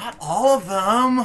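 acted, exasperated teenage tone, high and drawn out. Mimicking the other player's line: imitating an annoyed teenager. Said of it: "She said that like an annoyed teenager".

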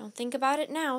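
ordinary delivery

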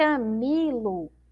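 long, heavy, stressed, drawn-out middle syllable mi in Camilo. Teaching the strong syllable in the name Camilo: stressed, lengthened syllable mi. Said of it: "Esse mi aqui é a que eu demoro mais tempo falando".

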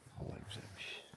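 hushed, soft, unvoiced whisper.

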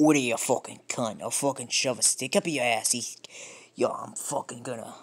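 Irish accent leaning toward Scottish sound. Trying out accents, the speaker attempts a Scottish-leaning Irish accent. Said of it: "a Scottish less Irish".

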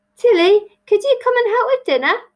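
high, loud calling shout. Narrator reads Grandma calling up the stairs to Tilly, shouting. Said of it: "she shouted up the stairs".

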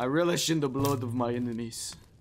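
put-on Scottish accent. Gamer giving an in-game character a voice while playing, Scottish Zavala voice. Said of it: "I sound like a Scottish Zavala".

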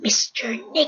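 tiny, high-pitched little parakeet voice. Recalling a pet parakeet and what it would say: Mr. Nick's tiny bird voice. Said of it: "Nick had a tiny little voice and would say".

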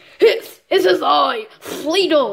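silly put-on puppet character voice. Introducing the character, Fleagle voice. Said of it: "how I got my Fleagle voice".

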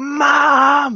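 very high, drawn-out, acted-out yell. Retelling a daughter yelling across the house: imitating a daughter yelling. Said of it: "she yells out again".

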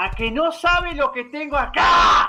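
slow, loud, teasing and taunting shout.

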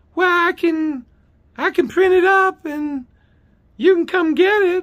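high-pitched lady voice. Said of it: "She has this high-pitched voice".

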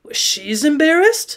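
incredulous, disbelieving tone. Narrator reads a man repeating the narrator's words back; incredulous. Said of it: "he repeated incredulously".

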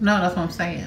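ordinary delivery

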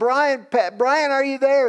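put-on, high-pitched yelling. Retelling a late-night call from outside the door: imitating someone yelling. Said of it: "he's yelling".

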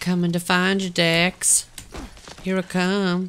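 put-on high, eerie, creepy old-man voice. Searching for Dex and calling out to him in a creepy old man voice from Family Guy. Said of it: "You sound like that creepy guy from Family Guy".

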